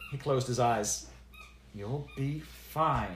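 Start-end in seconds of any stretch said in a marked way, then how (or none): 1.7-3.2 strained, words pushed through gritted teeth. Narrator reading a woman's reply to a warning before a spell, through clenched teeth. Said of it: "she responded through clenched teeth".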